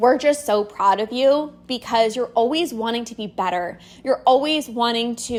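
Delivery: ordinary delivery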